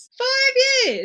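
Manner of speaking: outright loud shouting, very high-pitched. Telling a story to a co-host, the speaker repeats a phrase: shouting. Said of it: "it's literally like shouting".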